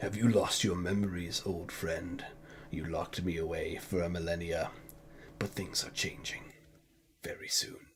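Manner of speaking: very quiet, deep, hushed, ominous, menacing voice. Narrator voices a voice forming from a pool of blood, deep, foreboding voice. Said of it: "forming a deep, foreboding voice".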